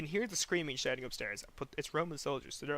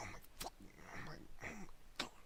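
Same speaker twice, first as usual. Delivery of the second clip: angry, whispered under-the-breath grumbling mutter; 15 dB quieter than usual. Retelling how the brother reacted after dying in the game: imitating someone muttering under breath. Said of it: "muttering under his breath".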